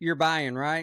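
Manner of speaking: put-on dead serious, deadpan tone. Retelling a breakfast with a tutor peering over the menu: imitating someone dead serious. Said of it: "he's dead serious".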